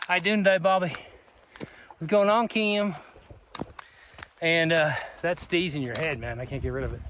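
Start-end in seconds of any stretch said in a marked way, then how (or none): 0.1-2.9 relaxed Southern drawl, pitched up. Showing how living in the south changes speech: southern accent. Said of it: "So you're always talking like this".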